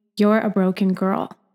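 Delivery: ordinary delivery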